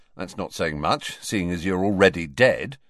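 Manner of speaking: plain reading voice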